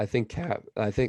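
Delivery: voice breaking and cracking mid-sentence. A hockey commentator's voice cracks again mid-sentence; voice cracking. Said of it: "another voice crack".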